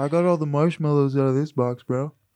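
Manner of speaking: put-on high, spaced-out stoner dude voice. Speaker acts out a stoner, stoner voice. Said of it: "stoner in general".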